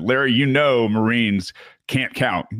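high, wisecracking yell, shouted out in a joking way. Retelling a joking reply yelled out to a question: retelling a yell. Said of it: "And I just yelled out".

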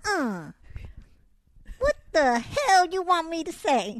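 very slow drawl with pitch swooping high. Answering a request for a short bit: Wanda Sykes impression. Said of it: "talk to me like Wanda for a second".

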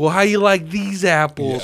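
mocking, taunting tone. Retelling a movie scene where he is taunting another guy: mock taunting. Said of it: "taunting this dude".

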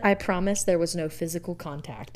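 ordinary talk

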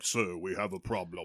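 super deep heavy voice, very low and quiet murmur. Retelling a scene with the big demon henchman: super deep Kevin Grevioux voice. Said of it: "with a super deep voice being like".

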